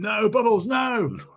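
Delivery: put-on, high, full-throated, ringing shout. Telling a story, recreating shouting at Bubbles as he dives away, retelling a shout. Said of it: "I'm shouting".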